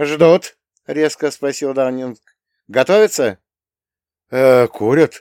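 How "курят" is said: confused, blurted out, louder. Asked what the guardsmen are doing, a man blurts in confusion. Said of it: "растерянно вытолкнул Руни".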